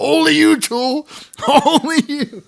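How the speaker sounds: put-on screaming yell, way up high. Telling about a running joke with cousins, imitating someone yelling. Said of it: "But he was yelling".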